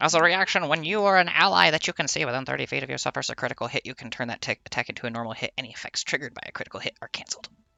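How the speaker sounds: very fast, rushed, rattled-off reading. Player reads out a reaction ability's rules text, really fast. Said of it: "He just said it really fast".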